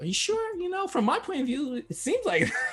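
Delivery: doubtful, incredulous tone.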